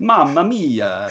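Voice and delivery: put-on broad Italian accent, laid on thick. Joking about how an actor greeted a fan: put-on broad italian accent. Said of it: "Was he going like this?".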